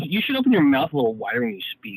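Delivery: dry, passive-aggressive tone. Retelling a film scene to friends: imitating Willy Wonka, passive aggressive. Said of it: "very passive aggressive".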